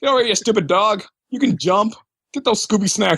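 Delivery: put-on bossy tone. Retelling how a game character ordered Scooby around: imitating someone bossily ordering around. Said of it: "He was just ordering Scooby around".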